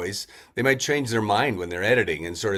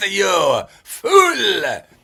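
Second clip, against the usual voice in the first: bad put-on French accent, very high and loud; 10 semitones higher, 9 dB louder than usual. Describing how a character on the show always talked, in a bad french accent. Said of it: "bad French accent".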